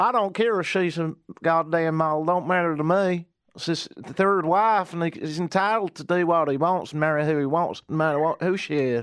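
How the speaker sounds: put-on Southern drawl, mock Tennessee accent. After another speaker's attempt, trying a Tennessee NASCAR drawl impression better. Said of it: "Let's see if I can do it better".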